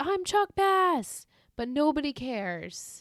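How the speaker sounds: screamed outburst. Recapping a scene where Chuck screams before Blair answers, retelling Chuck Bass screaming. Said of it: "then he screams".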